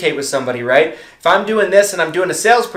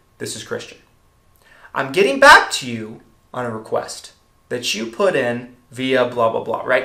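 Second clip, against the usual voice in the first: calm, settled tone brought back down; 5 semitones lower than usual. Showing sales tonality on a self-introduction, calm, brought back down. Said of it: "I'm bringing it back down calm".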